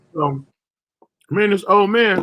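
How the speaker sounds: talking mid-chew, mouth full of food. Starting a story about an old man at the store, talking while chewing. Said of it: "excuse my chewing".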